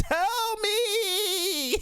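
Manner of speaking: mock upset, very high, "me" drawn out. Retelling a movie scene where Loki demands the truth: upset Loki voice. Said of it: "My man Loki got upset".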